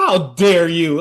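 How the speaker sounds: deeply offended, indignant, disbelieving tone. Retelling the mom glaring at the dad: imitating Bonnie Hunt, indignant. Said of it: "Bonnie Hunt's just looking at him like".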